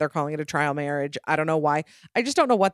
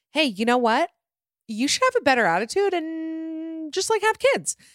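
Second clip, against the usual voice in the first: high, sarcastic mock voice. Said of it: "I'm saying this all sarcastically".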